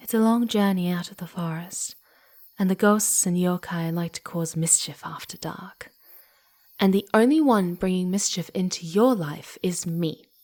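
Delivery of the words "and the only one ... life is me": firm, resolute delivery. A devious kitsune urging the listener to stay the night, firm.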